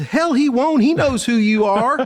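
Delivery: put-on high-pitched Mississippi accent. Retelling meeting the listener's dad, quoting his reply in a Mississippi accent. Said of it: "I like your Mississippi accent right there".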